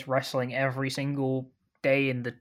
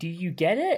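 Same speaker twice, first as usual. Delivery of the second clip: put-on shouting, higher; 5 semitones higher than usual. Mocking how obvious the show is by pretending to shout: mock shouting. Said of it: "just shouting".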